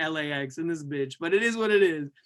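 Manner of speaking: ordinary talk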